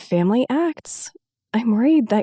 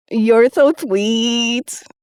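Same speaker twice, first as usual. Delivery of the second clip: mocking, teasing tone; 3 dB louder than usual. Reading a story, a friend teasingly answers a compliment: mocking. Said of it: "Anna mocked".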